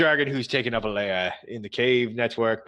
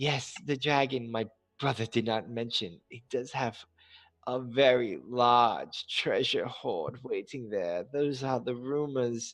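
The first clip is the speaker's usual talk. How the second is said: soft, enticing, seductive half-whisper close to the ear; 7 dB quieter than usual. Narrator voicing Oriana, hands on Odolin's shoulders, half-whispering. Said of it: "she whispers and she says".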